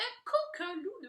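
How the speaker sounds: ordinary delivery, nothing marked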